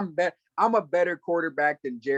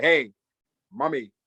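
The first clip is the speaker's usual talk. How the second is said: put-on grown man sounding childlike, higher pitched; 3 semitones higher than usual. Mocking how the rizza calls his mother: imitating the rizza saying mommy. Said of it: "he be like".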